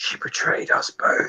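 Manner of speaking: faint, secretive whisper. Narrating a scene where the sire nods and speaks in secret; faint whisper. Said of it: "a faint whisper".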